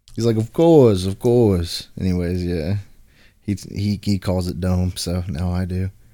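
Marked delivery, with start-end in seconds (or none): 0.4-1.9 loud put-on Wisconsin accent. Showing how a buddy from Wisconsin talks: imitating Eric's Wisconsin accent. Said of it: "He's from Wisconsin, so he talks like that".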